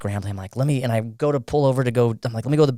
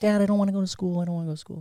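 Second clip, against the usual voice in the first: put-on hurried, cute, high voice of a six-year-old; 8 semitones higher, 4 dB quieter than usual. A father imitates his six-year-old son that morning, cute little kid voice. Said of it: "It's a cute little voice".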